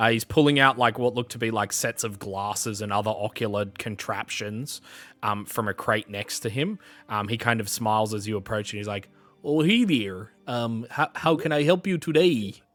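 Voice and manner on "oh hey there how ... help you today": put-on high, goofy, laid-on Minnesota accent. Voicing a stall keeper greeting someone who approaches, in a Minnesota accent. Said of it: "Minnesota accent".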